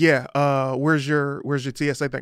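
ordinary delivery

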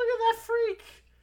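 put-on shrill, very high, loud little-girl voice. Retelling a cartoon scene where someone mocks a character: imitating a little girl. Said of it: "a little girl go".

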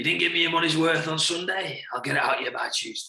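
croaky voice. Retelling what a man used to say to the team after a weekend loss, imitating a croaky voice. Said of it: "really croaky voice".

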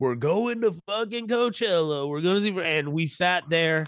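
loud, high, put-on Oklahoma man's accent. Imagine your podcast as three random dudes in Oklahoma, speaking in a put-on Oklahoma accent. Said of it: "Why you give us that accent".

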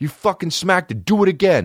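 very high, shrill scream. Retelling a confrontation with a man, retelling a scream. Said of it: "I scream at this guy".

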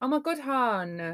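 high, slow, put-on Essex accent, "hon" drawn out. Asking whether the other speaker dislikes that accent: put-on TOWIE Essex accent. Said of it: "you don't like a Towie accent".

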